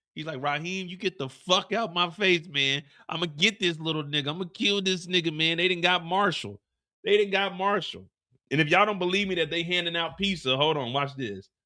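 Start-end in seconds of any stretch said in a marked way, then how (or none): 0.4-8.1 furious, worked-up, raging rant. Retelling Jannard going off at Raheem: imitating Jannard going off. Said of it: "So Jannard's going off".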